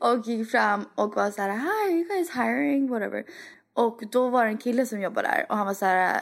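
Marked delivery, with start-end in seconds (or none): 1.5-2.9 put-on cute, quirky tone, higher pitch. Retelling asking shop staff about jobs: imitating own cute quirky manner. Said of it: "In my cute little quirky, nice peace and love personality".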